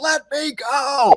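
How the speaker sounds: put-on very high, shrill, loud child's scream. Describing a play where a tied-up six-year-old shouts to be freed, retelling a child's shout. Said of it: "he's shouting like".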